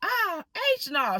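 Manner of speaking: loud, shrill, very high outburst. Retelling what the mother exclaimed in the store: imitating someone saying it loudly. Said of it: "She said it real loud".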